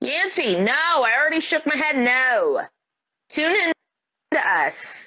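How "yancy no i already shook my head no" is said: full-on, loud yelling. Speaker, talking with Yancy, answers her by yelling. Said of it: "That's why I'm yelling at her".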